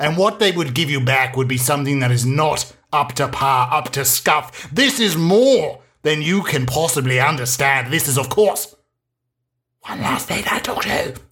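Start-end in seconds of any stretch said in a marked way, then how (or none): 9.8-11.1 soft whisper, pitched up. Host introducing his talk show by name: whispered. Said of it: "Which I say with a whisper".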